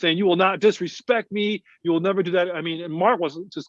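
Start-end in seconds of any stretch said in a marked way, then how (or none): 0.2-2.5 barked shout, held back. Retelling how a man yelled while dragging someone down a hallway, retelling a shout. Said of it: "at the top of his lungs".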